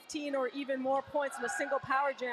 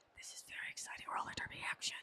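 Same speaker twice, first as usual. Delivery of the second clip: very quiet, hushed whisper. Commentating on live roller derby action for listeners, whispering. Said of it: "I'm whispering".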